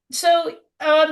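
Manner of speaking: choked-up voice.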